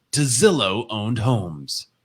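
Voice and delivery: slow, put-on announcer voice. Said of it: "the announcer voice".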